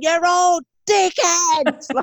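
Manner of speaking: very high bellowing. Retelling yelling at lads throwing mud: retelling own bellowing. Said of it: "I'm just bellowing".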